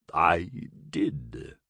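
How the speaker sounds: gurgling, gurgled voice. A narrator reading Roxwolf's reply to a question, in Roxwolf's gurgling voice. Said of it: "Roxwolf's gurgling voice agreed".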